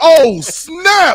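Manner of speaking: put-on excited screaming shout. Retelling reacting to breaking football news: retelling an excited scream. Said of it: "And I screamed out".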